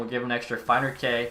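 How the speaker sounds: ordinary delivery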